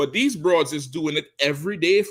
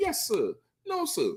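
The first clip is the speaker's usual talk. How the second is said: very high, soft, prim and proper deferential tone; 12 semitones higher, 7 dB quieter than usual. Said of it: "she change her voice and talk all proper".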